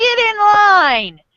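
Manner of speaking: very high, shrill yell, drawn out. Game narrator voicing a man looking around and ordering people into line, yelling at people. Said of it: "He's yelling at people and kind of going like".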